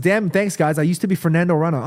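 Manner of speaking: usual speaking voice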